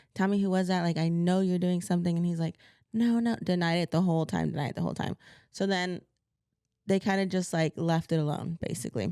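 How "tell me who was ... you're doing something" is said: plain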